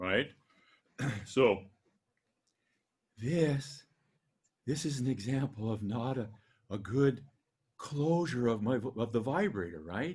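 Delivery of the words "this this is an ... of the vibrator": really breathy, loose, airy voice. Voice lesson showing not a good closure of the vibrator, in a really breathy voice. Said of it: "It's really breathy".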